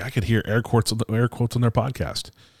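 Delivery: ordinary talk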